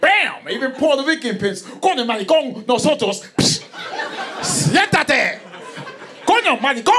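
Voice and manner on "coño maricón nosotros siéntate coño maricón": commanding and forceful, at full power. Joking about the power in pimps' voices, doing a powerful Puerto Rican pimp voice. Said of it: "You hear that power?".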